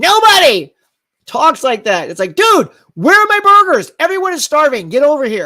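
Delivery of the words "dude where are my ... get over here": riled-up, worked-up voice, projected loud and pitched up. Showing how people really talk when something is at stake: projecting, riled up. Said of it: "That's how people talk".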